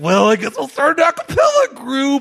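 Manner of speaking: high, nerdy, swooping voice. Describing a movie star as nerdy: nerdy Anna Kendrick impression. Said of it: "this nerdy".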